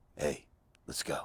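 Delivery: whispered, breathy, hushed villain voice. Demonstrating the voice that gets film work as the bad guy: bad guy voice. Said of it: "because I do this voice".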